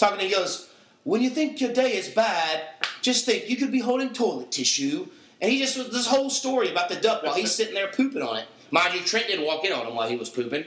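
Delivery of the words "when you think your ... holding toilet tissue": put-on British accent, pitched up. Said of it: "like a British accent".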